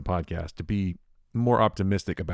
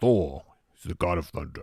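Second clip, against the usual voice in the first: bad put-on hero voice with a little rawr. Joking about playing Thor like a movie character: Chris Pratt's Thor voice. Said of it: "Chris Pratt pretending to be Thor".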